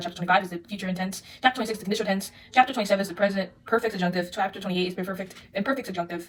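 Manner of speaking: very fast, rapid-fire, very quick pace. Speaker reading out a list of chapters, apologizing for the speed; speaking very fast. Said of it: "I'm speaking very fast".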